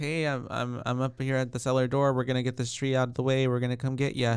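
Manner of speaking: normal talking voice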